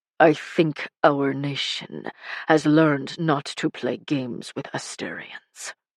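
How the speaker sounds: openly sneering, scornful delivery. Reading Ton's line in a story: sneering. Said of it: "and as Vassa looked up and down his enormous body and withering gaze, / and Ton had taken his place shortly after in a legendary display of skill and strength. While Murray elected their foreman throu".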